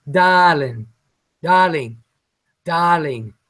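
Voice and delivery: put-on British English accent on repeated darling. Practicing the word she is being taught to say: attempted british accent. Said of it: "She's teaching me how to speak, um, English".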